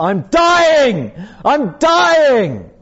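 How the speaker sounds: very high, very slow, swooping, drawn-out yell. Recalling his mother waking him at seven, retelling a yell at full voice. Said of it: "She was yelling at the top of her voice".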